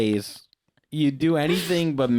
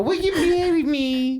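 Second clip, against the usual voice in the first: very high-pitched, squeaky cartoon voice; 14 semitones higher than usual. Retelling the question he asked her, done in a Whitey voice from Eight Crazy Nights. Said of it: "I went with that voice. It was like fucking Whitey from Eight Crazy Nights".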